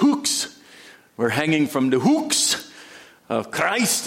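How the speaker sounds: put-on hooks pronounced in an Irish accent. Recalling an Irishman's words, quoting him in his Irish accent. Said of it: "in his Irish accent".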